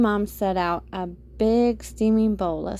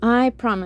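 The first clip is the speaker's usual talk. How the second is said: usual speaking voice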